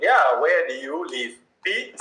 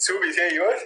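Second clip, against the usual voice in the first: plain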